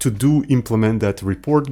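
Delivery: plain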